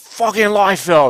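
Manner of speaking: put-on New York accent. Retelling what a woman said about buying Youngblood, imitating her New York accent. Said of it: "she had that New York accent".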